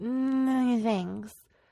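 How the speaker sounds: mock mumbling under breath. Retelling how an instructor quietly stated the printing rules: imitating Tim mumbling under his breath. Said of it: "kind of mumbled under his breath".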